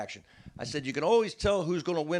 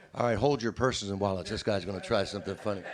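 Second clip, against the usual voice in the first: put-on laid-back radio DJ voice, lower; 7 semitones lower than usual. Retelling how an emcee introduced the first comedy set: laid-back FM DJ voice. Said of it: "kind of laid back seventy-seven".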